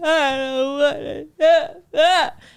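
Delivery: very slow, drawn-out, high sobbing whimper. Retelling a film scene, imitating Jada Pinkett's character crying. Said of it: "when Jada Pinkett's character was crying over her brother".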